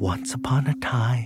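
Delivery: softly whispered. Leading two listeners in a rhyme they repeat back line by line, whisper. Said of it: "repeat after me in a whisper".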